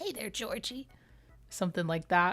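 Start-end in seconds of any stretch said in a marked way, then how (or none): 0.0-0.9 softly breathed, with the pitch raised. A speaker talks about favourite voiceovers and demonstrates one; It Clown voice. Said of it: "Another voiceover I love is the It Clown".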